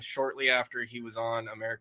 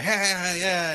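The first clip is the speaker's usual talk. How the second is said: high, loud, hyped-up comic voice. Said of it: "like, energy guy".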